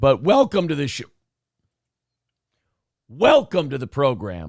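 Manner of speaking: hoarse, strained voice. Welcoming listeners to the program with laryngitis: hoarse voice from laryngitis. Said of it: "we've diagnosed me with acute laryngitis".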